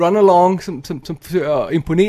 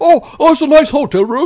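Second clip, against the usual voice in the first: put-on British accent, pitched much higher; 9 semitones higher, 6 dB louder than usual. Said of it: "Sådan lidt britisk accent".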